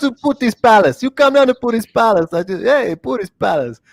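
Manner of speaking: bad, high-pitched put-on Russian accent. Joking around with co-hosts, the speaker does a bit in a bad Russian accent. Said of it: "I don't even know what accent I'm".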